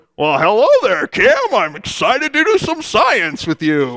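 cheery, animated, excited sing-song host voice. Greeting Cam at the door, ready to do some science, in an excited Mr. Wizard voice. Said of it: "Because that's how Mr. Wizard talked".

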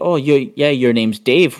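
normal talking voice

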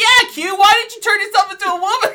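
very loud, shrill, high-pitched shouting yell. Retelling what she shouted at Q: retelling own yell. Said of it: "I was like yelling at him".

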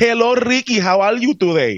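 put-on Puerto Rican accent, pitched very high. Retelling a greeting from a McDonald's lady: imitating a Puerto Rican accent. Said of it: "has that weird Puerto Rican accent".

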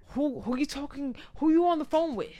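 acted high, pushy, confrontational, aggressive tone. Retelling an angry demand from an ex on the phone: imitating an aggressive ex. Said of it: "he's, like, all aggressive".

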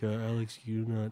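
put-on quiet, relaxed coach voice. Retell what your coach at the time said to Alex, in a bad Chris Leone impression, quiet. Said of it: "This is a terrible Chris impression".

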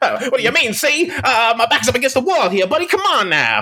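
put-on old-timey movie star voice, swooping high. Showing how everyone does an old-timey movie star voice, Jimmy Stewart old-timey movie star voice. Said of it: "every time anyone does an old-timey movie star voice".

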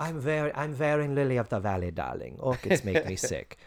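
put-on Hungarian accent. Retelling a guest star's line: Zsa Zsa Gabor impression. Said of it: "my expert, perfect Zsa Zsa Gabor impression".

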